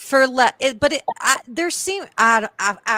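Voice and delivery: stammering, stuttering, tripping over words. Struggling to respond about losing subscribers over less, stuttering. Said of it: "I'm stuttering".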